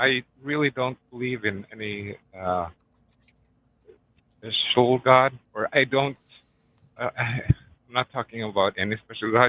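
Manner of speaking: nervous, hesitant, halting speech, stumbling over words. A caller answers the host's question about belief, nervous and hesitant. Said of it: "I'm sorry, I'm really nervous".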